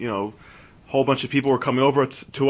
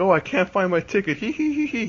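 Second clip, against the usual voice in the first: put-on giggling drunk voice, higher; 8 semitones higher than usual. Retelling a drunk friend who can't find his ticket: imitating a giggling drunk friend. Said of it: "smiling and frickin' giggling".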